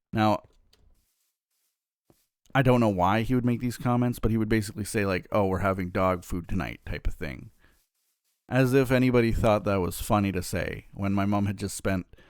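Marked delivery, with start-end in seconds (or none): 5.3-6.7 put-on muttering under the breath. Retelling the dad's comment about dinner: imitating muttering under breath. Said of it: "almost muttering under his breath".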